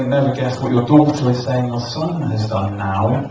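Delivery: normal talking voice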